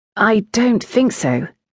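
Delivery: rather unsure, uncertain, hesitant tone. Asked whether a poem is innuendo, he answers uncertainly. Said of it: "rather uncertainly".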